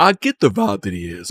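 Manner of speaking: cracking, breaking voice. Talking about how short someone is, voice cracking. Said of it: "my voice cracked".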